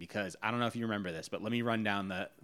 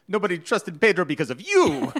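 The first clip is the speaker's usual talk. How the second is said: shrill, swooping, loud, high put-on Italian accent; 9 semitones higher, 12 dB louder than usual. Quoting what Pedro says on the show: Pedro voice, Italian-sounding accent. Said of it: "I know that probably sounded more like an Italian accent than anything else".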